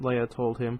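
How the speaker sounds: plain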